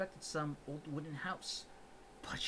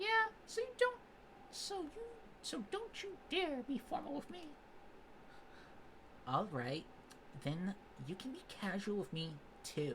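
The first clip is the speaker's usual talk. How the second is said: very high, sing-song, swooping put-on voice; 12 semitones higher than usual. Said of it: "I suck at high-pitched voices".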